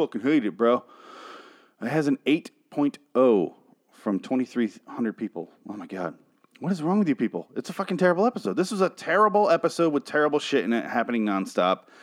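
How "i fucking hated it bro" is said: put-on Southern accent. Ranting about an episode's IMDb rating, switch into a put-on southern accent. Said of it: "I'm talking with a southern accent".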